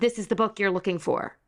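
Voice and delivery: ordinary delivery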